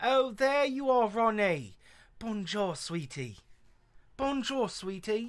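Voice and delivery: put-on London Cockney accent. Imitating a woman character greeting someone, cockney accent. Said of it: "She has like a Cockney accent from Britain".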